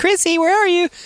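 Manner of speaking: tiny, very high little woman's voice. Explaining a ghost voice they made, the speaker repeats it; little woman voice. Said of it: "I did the little woman voice".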